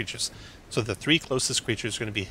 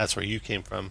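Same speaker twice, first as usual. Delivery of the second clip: normal talking voice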